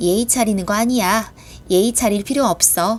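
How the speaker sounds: ordinary talk, nothing marked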